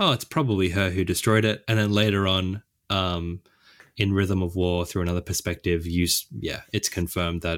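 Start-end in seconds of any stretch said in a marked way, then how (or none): none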